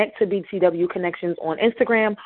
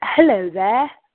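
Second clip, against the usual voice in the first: polished, proper, formal standard speech; 4 dB louder than usual. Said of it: "in the dialect of".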